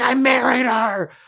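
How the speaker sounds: shrill, very high, loud scream. Retelling a scene where Jack is pushed to answer: imitating Jack screaming. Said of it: "basically screams".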